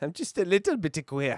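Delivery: put-on Scottish accent. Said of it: "with the Scottish accent".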